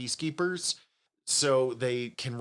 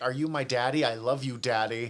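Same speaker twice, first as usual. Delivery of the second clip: put-on sweet, cutesy, sugary little kid voice. Retelling a scene where a hologram kid speaks: imitating a hologram kid. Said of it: "a little hologram kid that's like".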